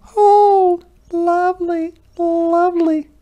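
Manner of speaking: tiny, very high, squeaky mouse voices. A narrator reads the mice thanking a hedgehog who gave them his hat, squeaky voices. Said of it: "they squeaked".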